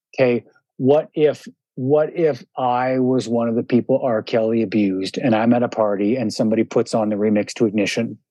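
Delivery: ordinary talk, nothing marked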